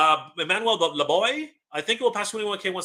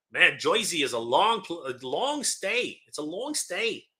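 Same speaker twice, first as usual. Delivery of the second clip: terrible put-on New York accent, drawn out. Speaker jokes with the other speaker about travelling to Comic Con: terrible New York accent. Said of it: "That's a terrible New York accent".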